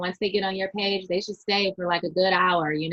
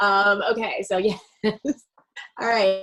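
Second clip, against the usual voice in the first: normal talking voice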